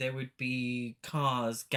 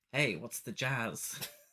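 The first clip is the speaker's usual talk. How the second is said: acted fifties teenager voice, slow; 3 dB quieter than usual. Trying out a fifties teen voice, clicking fingers: put-on fifties teen voice. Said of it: "I need to click my fingers when I'm doing it".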